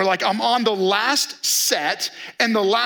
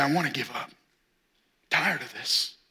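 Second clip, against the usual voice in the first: mock muttering under breath, lower and quieter; 8 semitones lower, 7 dB quieter than usual. Retelling what is said on hard days: imitating muttering under breath. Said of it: "under my breath".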